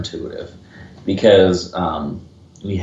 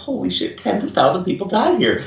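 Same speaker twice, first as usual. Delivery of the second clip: put-on giddy, grinning, gleeful excitement, higher pitch; 12 semitones higher than usual. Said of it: "grinning like an idiot and I'm like".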